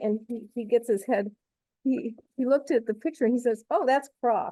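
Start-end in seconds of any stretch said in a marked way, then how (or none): 3.7-4.5 put-on, high-pitched, dismissive, condescending tone. Retelling a stranger's reply to a question about a photo: imitating a condescending reply. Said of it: "I thought he thought I was really stupid".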